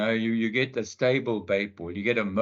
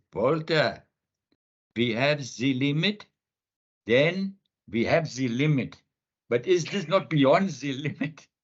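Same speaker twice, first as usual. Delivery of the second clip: put-on German accent, slow and high; 5 semitones higher than usual. Retelling what a German diver said underwater: German accent. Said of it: "you'll have to excuse my German accent".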